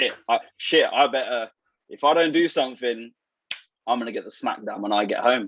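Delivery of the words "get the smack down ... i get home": normal talking voice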